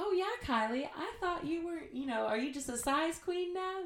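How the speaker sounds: put-on very high, small voice with Southern accent. Retelling what Lacey said when she came over, Lacey's little southern voice. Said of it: "her little southern voice".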